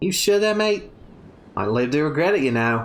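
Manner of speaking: put-on Australian accent. Voicing a game character's lines: Outback Steakhouse accent. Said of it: "your Outback Steakhouse accent".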